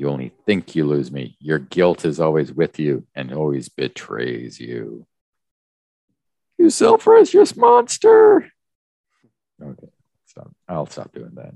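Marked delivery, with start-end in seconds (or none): 0.0-8.5 loud, swooping cartoon sitcom teenager voice. Voicing the pursuer who catches up in the tunnels, like The Simpsons teenager. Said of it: "It sounds like the teenager on The Simpsons".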